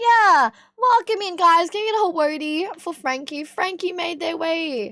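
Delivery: croaky, hoarse, raspy voice. Streamer welcoming viewers into the stream: croaky smoker's voice. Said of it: "It's really croaky now".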